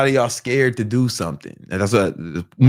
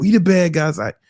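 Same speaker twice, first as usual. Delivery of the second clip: put-on, high-pitched yelled crowd chant; 7 semitones higher than usual. Retelling men kicking the bathroom door: imitating men yelling. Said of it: "They kept yelling".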